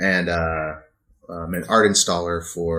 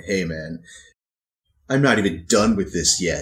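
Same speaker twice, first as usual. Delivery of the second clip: mock sarcastic, snarky, dismissive tone. Retelling what a painter said while painting: imitating a snarky artist. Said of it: "gave me this kind of snarky look".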